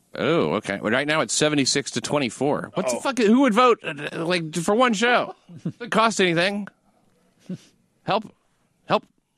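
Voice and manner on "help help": small dog voice, much higher. Reacting to the audience vote tally, calling out like a Pomeranian asking for help. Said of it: "I sound like a Pomeranian asking for help".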